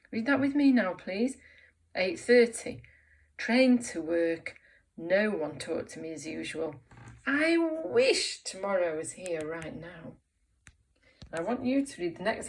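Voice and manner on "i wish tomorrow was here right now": longing, yearning voice, full of wanting. Leading a read-along exercise for listeners, in a really wanting voice. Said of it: "we say it in a really wanting kind of voice".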